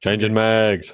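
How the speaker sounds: grave, weighty delivery. Doing a voice right after Keith David voicing Spawn is mentioned: Keith David impression. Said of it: "that's actually a pretty good impression".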